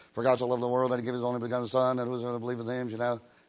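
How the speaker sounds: rushed, fast auctioneer-style patter. A preacher shows how preachers rush the verse: fast like an auctioneer. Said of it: "kind of like an auctioneer".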